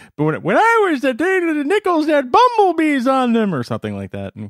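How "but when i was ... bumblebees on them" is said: very high, raised, swooping cartoon voice. Challenged by the other speaker, doing an Abe Simpson impression. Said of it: "do your best Abe Simpson impression".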